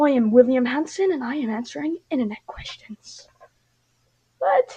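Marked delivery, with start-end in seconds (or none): 0.0-3.3 rigid announcer-style delivery. Reacting to an etiquette video, imitating William Hanson's voice. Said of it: "why does he sound like that?".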